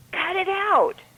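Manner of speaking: shrill, very high shout. Speaker retells hearing his cat cry out at 2 a.m.; retelling own yell. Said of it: "and I yell".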